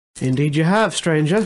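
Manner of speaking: put-on English woman's voice with British accent. Voicing a stranger who answers the players: female British accent. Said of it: "You hear a, you hear a female, uh, British accent".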